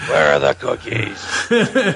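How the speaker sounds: put-on, gravelly superhero voice. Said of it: "too much gravel in your voice".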